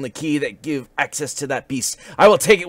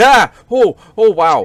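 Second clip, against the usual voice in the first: very loud, high, frightened, drawn-out startled yell; 8 semitones higher, 10 dB louder than usual. Opening a chest in the game and getting startled: loud startled yell. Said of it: "Sorry, that was loud".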